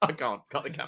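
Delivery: mock emotion catching in throat, voice breaking off. Retelling a viral clip about The Undertaker: imitating Vince McMahon choked up. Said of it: "he's all choked up and he's like".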